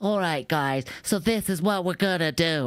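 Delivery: very high-pitched voice, hard to take seriously. Retelling a wrestling promo, imitating how Wheeler Yuta talks: Wheeler Yuta voice. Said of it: "I have a voice just like his".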